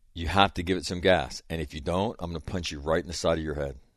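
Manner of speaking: mock irritated, threatening tone. Retelling a driving lesson, warning the learner: imitating own irritated warning. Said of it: "I'm getting irritated now".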